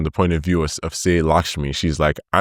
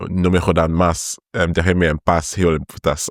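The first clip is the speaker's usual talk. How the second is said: ordinary talk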